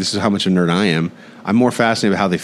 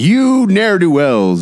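put-on mean dad voice, much higher, louder; 10 semitones higher, 5 dB louder than usual. Explaining where Batman's real power lies, doing Batman's mean dad voice. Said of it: "the mean dad voice that he takes when he's like".

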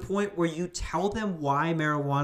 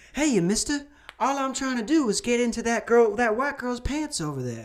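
old-timey put-on character voice, pitched higher; 9 semitones higher than usual.

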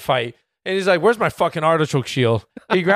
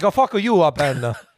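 put-on heavy Italian accent. Imitating how her italian friend would react, heavy italian accent. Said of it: "she has the heaviest accent".

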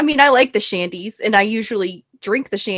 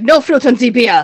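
loud, put-on Austrian accent on every word; 2 semitones higher, 7 dB louder than usual. Retelling an austrian man's words at a bar: imitating an austrian accent. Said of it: "That's a lovely accent you have there".

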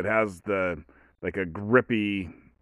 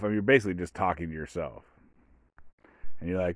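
ordinary talk

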